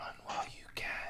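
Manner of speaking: faint, barely there, very quiet breathy whisper. Voicing an unseen whisperer warning a player: whispering voice. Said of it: "you hear a whispering".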